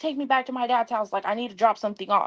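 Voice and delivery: mock argumentative, demanding tone. Retelling what he demanded during an argument, imitating someone arguing. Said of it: "He's arguing the whole time".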